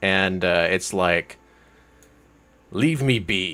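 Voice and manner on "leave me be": angry, annoyed beast voice. An upset creature turns on the person addressing it, angry creature voice. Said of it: "its face then gets angry".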